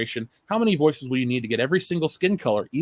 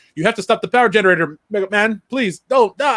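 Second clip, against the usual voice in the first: hammy, over-the-top bad dub voice, loud and high; 7 semitones higher, 6 dB louder than usual. Imitating a bad american dub of a game: over-the-top bad dub acting. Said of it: "it's just over the top bad".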